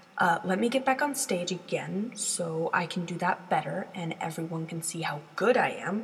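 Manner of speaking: plain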